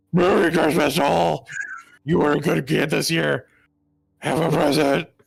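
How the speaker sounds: put-on gruff superhero voice. Voicing a Krampus-like figure handing out presents: really upset Batman voice. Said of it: "You sound like a really upset Batman".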